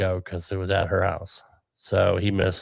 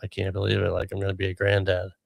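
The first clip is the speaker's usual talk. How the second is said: voice breaking with emotion; 3 dB quieter than usual. Retelling a dad's reaction to baby news: imitating someone choked up. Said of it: "he was really choked up over it".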